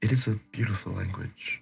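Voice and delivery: very hushed, barely there half-whisper. A player voices their character speaking in Sylvan, almost half-whispering. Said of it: "almost in a whisper".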